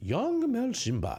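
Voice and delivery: very high, refined, upper-class aristocratic lady voice. Trying out a different voice for the others: sophisticated aristocratic woman voice. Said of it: "sophisticated, aristocratic woman voice".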